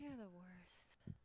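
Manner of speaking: faint, barely conscious murmur under the breath. Repeating a character's line while she is half passing out. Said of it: "half passing out".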